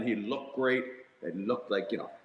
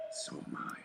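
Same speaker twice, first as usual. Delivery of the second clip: hushed, whispered, under the breath. Quoting a classic Wolverine line from the episode: Wolverine under his breath. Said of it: "under his breath".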